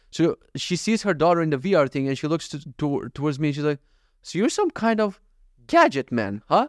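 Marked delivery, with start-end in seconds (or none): 4.2-6.6 higher-pitched, swooping tease with a little judgment. Retelling what a mother said to him while her daughter used VR, mimicking a half-judgy tone. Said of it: "with like a half a judgy tone".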